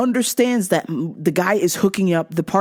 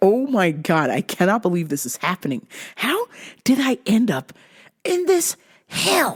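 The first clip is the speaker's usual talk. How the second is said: fed-up, exasperated, can't-believe-this disbelief. Speaker retells sitting there while dad yells at an iPad and mom complains, retelling exasperated disbelief. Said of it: "I'm just sitting there like".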